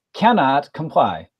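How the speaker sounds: feminine computer voice. Game narrator voices the computer's reply to the players, feminine computer voice. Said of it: "the computer's uh, feminine uh, voice say".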